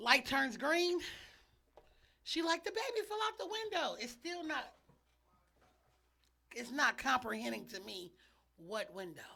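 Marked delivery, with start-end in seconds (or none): 2.6-4.0 acted-out, very high, top-of-the-lungs shriek. Retelling what a friend screamed on the phone: imitating someone screaming. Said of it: "screaming at the top of her lungs".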